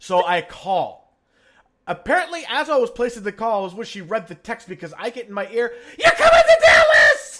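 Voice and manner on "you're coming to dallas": very loud, high-pitched, shrill, excited screaming. Retelling a phone call, acting out a friend's greeting: imitating a loud excited shout. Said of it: "Really loud".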